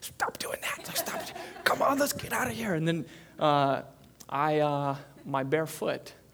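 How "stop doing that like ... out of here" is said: breathy, hushed whispered shout. Retelling telling the dogs off at night: imitating a whisper yell. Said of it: "so I'm doing that whisper yell 'cause we have neighbors".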